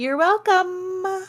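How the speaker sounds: high, slow, drawn-out, smug delivery.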